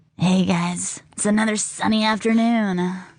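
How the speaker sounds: put-on raspy radio DJ voice. Joking with another speaker about radio hosts, doing a raspy Radio Girl voice. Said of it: "Radio Girl is that raspy uh, voice girl".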